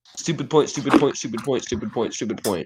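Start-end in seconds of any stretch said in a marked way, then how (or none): none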